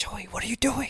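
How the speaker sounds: soft, high, hushed whisper. Retelling what someone said on waking up at night: imitating a whisper. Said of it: "whispering to me".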